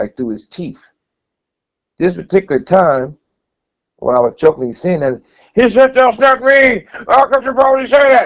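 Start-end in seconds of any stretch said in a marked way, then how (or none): 5.9-8.3 very high, loud, excited and agitated delivery. Retelling a man's reply to a joke: imitating an agitated outburst. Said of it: "He got so excited like he was about to die".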